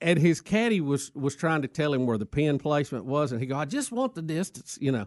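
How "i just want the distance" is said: clumsy, bad put-on Irish accent, high-pitched. Retelling a golfer mad at his caddy: bad Irish accent. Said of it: "Stay in it, though".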